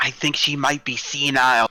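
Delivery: whispered aside. Playing a game character, speaking to the other players about her: whispering. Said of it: "I whisper to them".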